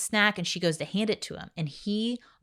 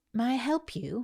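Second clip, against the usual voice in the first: put-on British accent, pitched up; 6 semitones higher, 4 dB quieter than usual. Retelling what a mentor asked a struggling mom: imitating a British accent. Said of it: "and she had a British accent".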